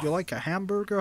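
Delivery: high, exaggerated, over-the-top put-on American accent. Asked about their accent, a speaker shows off an exaggerated american accent. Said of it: "that's my American accent".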